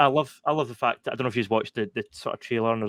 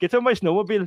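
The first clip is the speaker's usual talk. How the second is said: put-on Canadian accent, much higher; 9 semitones higher, 4 dB louder than usual. Showing how close the speaker's swedish accent is to a canadian one; canadian accent. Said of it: "it's very close to my Canadian accent".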